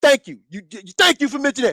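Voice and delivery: play-acted cocky, boastful, swaggering top-dog tone. Retelling a rival boasting about her belt: imitating a boastful boxer. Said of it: "She's like".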